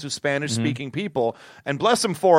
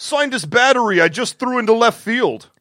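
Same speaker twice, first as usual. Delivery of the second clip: loud put-on New York accent; 6 semitones higher, 5 dB louder than usual. Imitating a baseball fan calling out: put-on New York accent. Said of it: "That was my New York accent".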